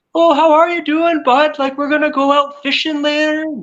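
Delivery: put-on high-pitched Newfoundland accent. Describing meeting a Newfoundlander, imitating their greeting in a Newfoundland accent. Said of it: "when you meet a Newfoundlander, they're just like".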